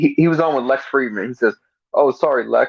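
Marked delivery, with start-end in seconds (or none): 1.9-2.7 put-on sorry tone laced with sarcasm, insincere. Retelling someone's apology tour: imitating a sarcastic apology. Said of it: "it's sarcasm, what he's doing".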